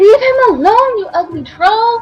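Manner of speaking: amplified voice. Player casting a spell in a game to call out at a troll: magically amplified voice. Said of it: "just to make my voice louder".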